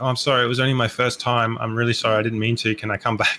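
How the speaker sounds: usual speaking voice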